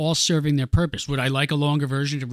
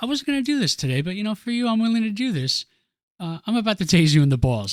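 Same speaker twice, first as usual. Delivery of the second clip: breezy, calm, unbothered, nonchalant, pitched up; 7 semitones higher than usual. Describing a movie scene, imitating her calm, nonchalant tone. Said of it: "how calm she's like".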